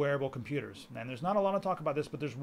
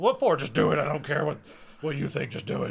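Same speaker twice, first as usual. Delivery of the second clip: raised, loud, bossy voice; 5 dB louder than usual. Imitating the boss who orders the interns out: imitating the boss's voice. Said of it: "that's the boss's voice".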